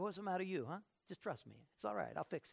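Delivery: put-on easygoing, relaxed Italian accent. Describing how they picture God talking: God with an Italian accent. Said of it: "I always picture God to have like an Italian accent".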